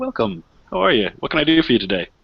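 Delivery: bright, friendly, cheerful, welcoming tone. Narrating a shop scene, voicing the woman behind the counter, big smiling welcome. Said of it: "has this big smile on her face".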